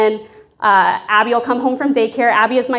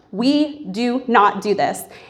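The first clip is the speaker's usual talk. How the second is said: slow, deliberate, scolding tone; 4 dB quieter than usual. Retelling telling a child in the tub off: retelling scolding a child. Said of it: "I'm scolding her".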